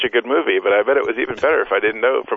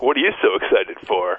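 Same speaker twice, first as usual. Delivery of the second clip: mock-condescending, put-on condescending tone. Retelling a man's reaction to his excited wife, imitating a condescending tone.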